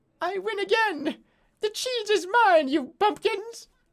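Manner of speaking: squeaky, tiny, very high rat voice. Narrator voicing a rat heard from the rat race course, tiny rat voice. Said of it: "you can hear a tiny voice".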